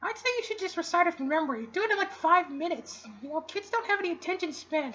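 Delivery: very high, wisecracking, sarcastic puppet stork voice. A stork character speaking, stork character voice. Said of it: "I'm a stork".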